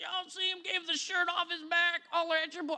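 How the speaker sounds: put-on folksy rural country accent. Speaker riffing to listeners, briefly slipping into a country accent. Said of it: "I went country there".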